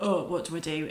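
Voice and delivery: ordinary talk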